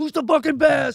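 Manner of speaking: very high, loud, pumped-up hype shout. Retelling how the team gets hyped before service, imitating himself yelling hype. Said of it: "I'm just yelling at 'em".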